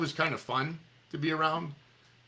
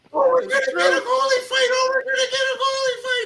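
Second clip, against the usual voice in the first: very high, very loud, shrill giddy top-of-lungs shrieking; 9 dB louder than usual. Retelling how an announcer reacted to a goalie fight: imitating a screaming giddy announcer. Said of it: "he's screaming at the top of his lungs".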